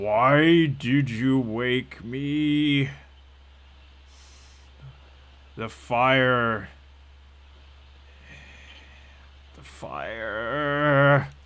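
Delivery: loud rumbling monster voice, me drawn out. Voicing something that speaks up from below when woken, in a rumbling voice. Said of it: "this sort of rumbling voice".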